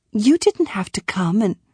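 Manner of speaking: usual speaking voice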